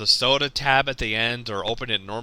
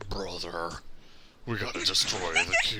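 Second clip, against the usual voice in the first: breathy, whispered character voice; 7 semitones lower, 10 dB quieter than usual. Retelling a coworker's Optimus voice from a voice-changing thing: imitating an Optimus voice. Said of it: "I'm doing the voice too good".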